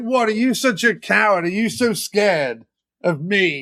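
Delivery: mocking, goading, bullying taunting jeer. Retelling a film scene of bullying Dracula out of hiding: imitating a taunt. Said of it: "he basically taunts, like, bullies Dracula".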